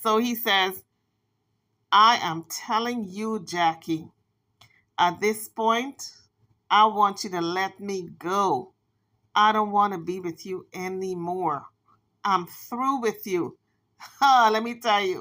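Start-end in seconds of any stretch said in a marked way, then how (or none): 1.9-13.6 slow, drawn-out, deliberate voice, each word carefully laid out. Retelling how a man told a woman he was through with her, imitating his slow voice. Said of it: "he put on his slow voice".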